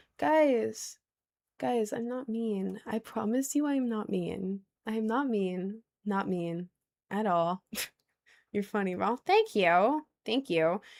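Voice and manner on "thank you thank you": weird LA accent with sing-song swoops. Thanking someone for a compliment, in a weird la accent. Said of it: "that was kind of like a weird L A accent".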